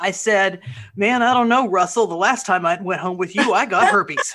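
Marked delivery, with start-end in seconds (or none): none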